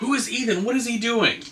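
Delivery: mock, high-pitched screaming yell. Retelling reactions while watching a show: imitating screaming at the TV. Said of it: "you're just screaming at the T V".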